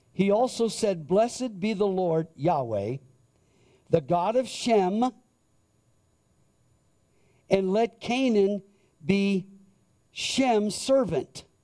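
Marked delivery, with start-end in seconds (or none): 1.1-11.5 very slow, deliberate reading tone. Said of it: "I'm gonna read it very slowly".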